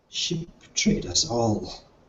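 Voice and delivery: strained whisper forced through a closing throat. Narrator voices a character staring at goo, in a whisper from a closing throat. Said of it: "he whispers out of his ever-closing throat".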